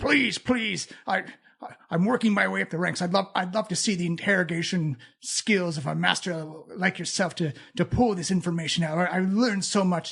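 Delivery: pleading half-orc voice, tripping over the words. Voicing a half-orc in robes begging a mind flayer: half-orc pleading. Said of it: "the orc is pleading with the".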